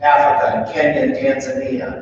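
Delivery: ordinary delivery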